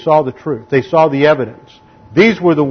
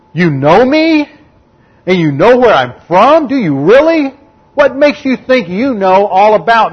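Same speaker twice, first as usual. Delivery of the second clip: mocking, sarcastic raised voice, swooping, meant to carry; 7 semitones higher, 4 dB louder than usual. Retelling a man's confrontation at the temple, making sure everybody hears: acting out a sarcastic shout. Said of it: "he raises his voice to make sure everybody hears".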